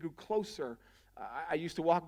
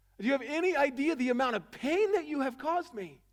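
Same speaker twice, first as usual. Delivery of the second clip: mock furious, angry outburst, higher pitch; 10 semitones higher than usual. Retelling crying out to God after running out of the house: retelling own angry outburst. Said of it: "I was so angry. I was so mad".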